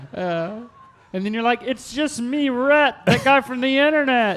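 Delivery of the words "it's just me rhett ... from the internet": odd, high, strange put-on ghost voice. Imagining giving someone hell until he breaks down, speaker voices himself: strange put-on voice. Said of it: "I don't know why I'm using that voice".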